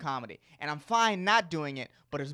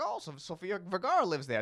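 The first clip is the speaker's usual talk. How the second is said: clumsy, failed put-on Australian accent; 4 dB quieter than usual. Imitating tourists from Australia on a celebrity bus tour, in a bad Australian accent. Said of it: "That's my Australian accent".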